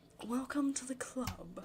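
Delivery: high voice of a rich aristocrat. Trying a better voice for a character's greeting, Monika as rich aristocrat. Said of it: "She sounds like a rich aristocrat".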